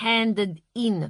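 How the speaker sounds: ordinary delivery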